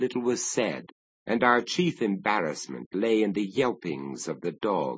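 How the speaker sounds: ordinary delivery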